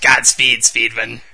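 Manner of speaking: very loud, booming comic-book supervillain bellow. Quoting the villain's line from the movie, Green Goblin impression. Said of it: "I know you like impersonating the Green Goblin".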